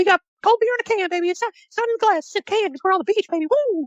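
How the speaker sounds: very high, cartoonish, goofy hype-man voice. You act out how Jimmy Hart always pimped his beach hut, in a Jimmy Hart impression. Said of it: "And he's like".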